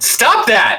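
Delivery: high-pitched shouting.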